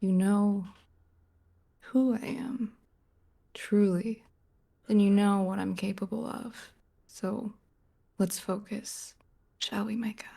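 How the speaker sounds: threatening, hushed half-whisper, very close. Leaning in to half-whisper a threat in a character's ear: half-whispering in character. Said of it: "I'm gonna lean in and whisper in his ear".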